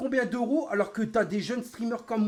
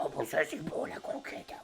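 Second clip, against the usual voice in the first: breathy, whispered, put-on talking-dog voice; 5 semitones lower, 9 dB quieter than usual. Imagining a pet dog talking about its kibble: imitating a dog talking. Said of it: "C'est comme si mon chien, dans la vraie vie, il dirait".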